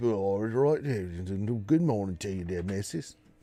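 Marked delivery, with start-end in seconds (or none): 1.0-3.1 real Cockney English accent, "good" drawn out. Showing off different English accents, greeting someone in a real Cockney English accent. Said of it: "I could do me real Cockney English accent".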